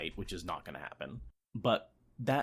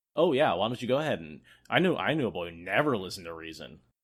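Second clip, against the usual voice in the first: louder, put-on mock sarcastic tone; 7 dB louder than usual. Acting out a character's reply while discussing a book: imitating a sarcastic reply. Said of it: "it's almost sarcasm. Just being like".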